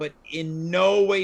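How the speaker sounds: ordinary talk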